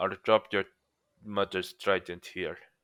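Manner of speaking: soft put-on Russian accent, murmured. Retelling a line from Vulko, the mentor in Aquaman, in a Russian accent. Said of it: "I'm sorry for the Russian accent".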